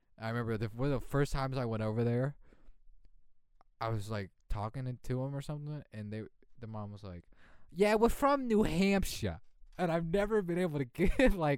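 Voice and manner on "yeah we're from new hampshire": put-on heavy, thick, laid-on New York accent, loud. Retelling what his mom said on an early visit, thick New York accent. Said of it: "the most New York accent ever".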